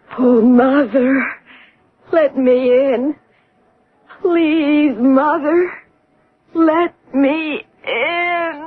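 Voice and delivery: begging, pleading voice, final word in drawn out. Telling a listener what the voice from the ruined gatehouse says, echoing a pleading voice. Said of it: "this pleading voice".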